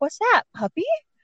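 play-acted, very high-pitched feigned innocent voice. Retelling what he said while pretending to be innocent: feigning innocence. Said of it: "pretending that he's innocent".

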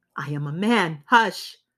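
stern, fierce, slow, deliberate delivery. A man hushes a woman who has just said she is afraid, fierce. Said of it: "he said fiercely".

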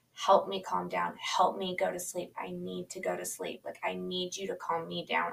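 acted, mock-sobbing, begging voice. Recounting a night, the speaker acts out what they said to him, retelling sobbing pleas. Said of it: "I just sobbed and I begged him".

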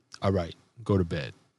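quiet stern tone, low pitch. Showing how to channel anger when speaking, in a soft, stern voice. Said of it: "soft, subtle, stern voice".

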